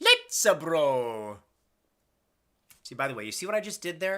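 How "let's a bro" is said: low, loud put-on voice with bro drawn out. Quoting Alonzo's greeting in a put-on voice, low Mario voice. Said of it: "That sort of lower tone of the Mario voice?".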